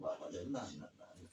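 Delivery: very soft, breathless, soothing hushed voice.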